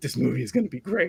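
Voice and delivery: put-on whisper. Retelling what a friend said during a movie: imitating a friend whispering. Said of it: "Steve turns to me and whispers in my ear".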